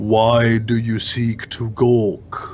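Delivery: voice of a stirring spirit. A spirit's voice resounding in the listener's head, booming. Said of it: "a booming voice resounds in your head and asks".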